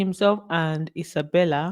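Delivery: ordinary talk, nothing marked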